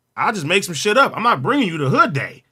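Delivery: normal talking voice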